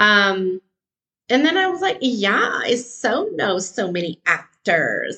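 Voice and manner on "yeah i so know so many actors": put-on talking like a valley girl. Retelling how they started talking to people, in a valley girl voice. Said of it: "I started to begin talking like a valley girl".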